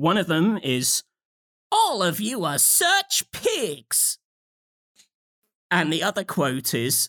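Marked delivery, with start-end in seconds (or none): 1.7-4.2 put-on southern accent character voice, higher. Reading out a game character's quote in a put-on southern accent. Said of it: "you made her sound like some sort of, like, southern".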